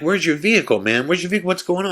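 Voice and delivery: freaked-out, frantic, high, rushed, panicked voice. Speaker recounting the group questioning a man found in the house: retelling freaked-out questions. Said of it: "we're all freaking out".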